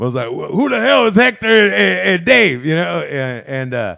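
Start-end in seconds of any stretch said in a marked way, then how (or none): 0.3-2.6 loud, rough, rasping, pitched-up put-on voice. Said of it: "Mister T for me".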